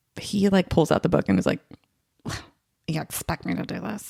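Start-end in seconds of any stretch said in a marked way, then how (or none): 2.9-4.1 play-acted, really nasty, scornful tone. Retelling a partner's response to a gifted couple's book: imitating a nasty reaction. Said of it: "this really nasty reaction".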